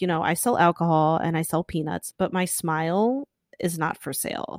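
normal talking voice

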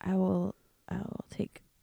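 soft-spoken, timid. Asked to show how they would order a burrito, speaking quiet and timid. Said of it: "Quietly and timidly, apparently".

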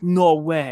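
normal talking voice

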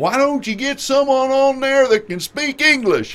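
put-on heavy Texas accent, shrill, high, loud yell. Retelling a man in the audience who yelled out, imitating a Texan yelling out. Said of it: "a real bad Texas accent, he yells out".

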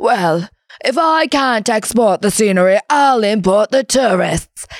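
put-on very posh, upper-crust accent. Retelling the CEO's exclamation on reaching Banff, very posh accent. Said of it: "I imagined he had this very posh accent".

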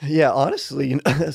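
voice breaking. A podcast guest starts answering a question about fasting, voice cracking. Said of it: "sorry, my voice cracked".

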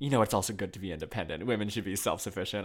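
ordinary delivery

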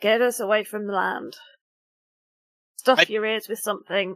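loud, growling shouted yell. Game master voicing Cameron at the helm of a boat, growling yell. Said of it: "growls to herself and yells".

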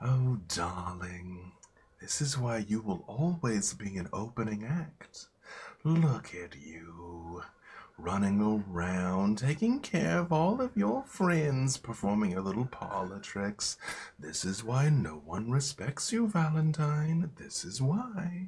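beast-like half-whisper with "you" drawn out. Narrator voices the beast addressing Valentine, half-whispering in your ear. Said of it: "The beast whispers in your ear".

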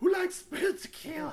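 high, loud, crackly rock-star stage voice.

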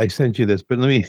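usual speaking voice

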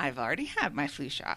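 mock smug, self-satisfied, pleased-with-itself tone. Retelling own reply to a pharmacist's offer: retelling own smug reply. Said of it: "smugly said".

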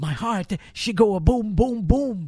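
put-on slight Greek accent. Speaker retells Georgiadis answering Capper after the spin, in Georgiadis's little Greek accent. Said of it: "you got the little Greek accent".

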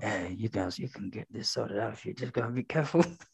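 very low, quiet, hushed little whisper. Describing someone's Biden bit, doing Biden's little whisper. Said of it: "And his little whisper".

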